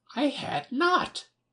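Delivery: shrill, sharp, very high, furious cry. Reading a story, the Mouse snaps back at Alice, sharply and very angrily. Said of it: "sharply and very angrily".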